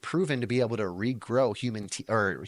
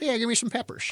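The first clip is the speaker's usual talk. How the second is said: put-on very high, gummy, toothless old man voice; 13 semitones higher than usual. Joking about eating peppers when eighty: put-on toothless old man voice. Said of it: "Why are you gonna talk like that when you're old?".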